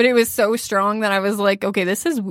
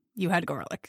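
mock unenthused, low-key, cheerless delivery; 4 semitones lower, 10 dB quieter than usual. Imitating the other speaker telling someone they had garlic: imitating a not upbeat tone. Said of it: "you don't say it, like, that upbeat".

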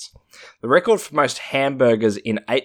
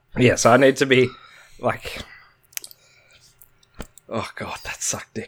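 winded, out-of-breath voice; 2 semitones higher than usual. Reacting after finishing a hot dog against the clock, winded from eating. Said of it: "You sound winded from eating".

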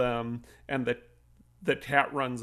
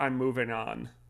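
mock grave, solemn, slow, somber tone; 5 dB quieter than usual. Describing a film scene, quoting a character speaking to Ripley, retelling a somber line. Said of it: "he goes real kind of somber".

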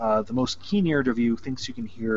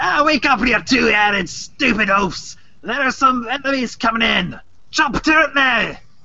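shrill gruff holler, very high and loud; 13 semitones higher, 9 dB louder than usual. A voice calls down from the balcony above, in a high-pitched gruff voice. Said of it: "a bit of a um, high pitched and gruff voice from the balcony above you".

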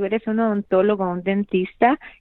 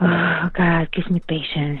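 put-on exasperated sighing, slow and frustrated pleading; 3 semitones lower than usual. Showing a phrase said often when something happens: imitating own frustrated sigh. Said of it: "I may be saying a little bit kind of, like, frustrated way".

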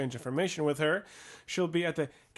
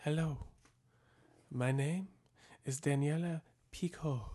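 put-on gentle, soft woman's voice with a light French accent; 6 dB quieter than usual. After the group says hello, a woman replies; soft woman's voice, slight French accent. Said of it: "a soft woman's voice with a slight French accent says".

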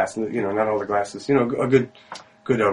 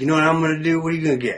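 mock drunk man voice, higher; 6 semitones higher than usual. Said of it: "he's very drunk".

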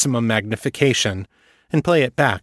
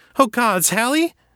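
very high voice edged with panic, panicked cry; 12 semitones higher than usual. Sophie cries out as Hallie reels backwards, panicked cry. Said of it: "panic edging her voice".

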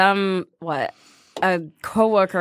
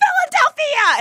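high, slow shout. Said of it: "I'm like".

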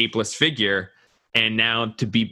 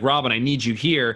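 mock yelling; 2 semitones higher than usual. Recounting how he gets out of a sequence and calls out, retelling a yell. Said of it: "he yells like".

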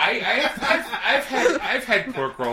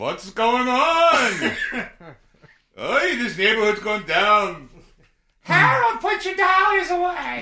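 put-on raised-pitch elderly voice; 5 semitones higher than usual.

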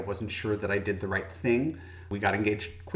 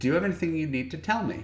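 very tender, careful, gentle, pitched-up voice; 7 semitones higher than usual. Retelling how she sat you down and asked you, imitating someone speaking gently. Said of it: "very gently".

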